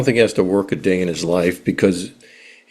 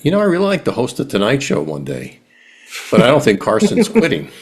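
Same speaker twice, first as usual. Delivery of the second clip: mock tongue-in-cheek sarcastic, pitched-up delivery; 5 semitones higher than usual. Speaker recalling answering a man who asked what they'd like to do, retelling a sarcastic reply. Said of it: "And sarcastically".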